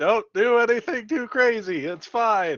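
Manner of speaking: high-pitched shouting. A player says what their character will be yelling during the fight, yelling. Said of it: "I'll just be yelling".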